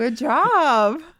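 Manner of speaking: very loud, condescending, job drawn out. Praising another speaker's guess about a word's sounds, condescending. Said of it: "don't be condescending".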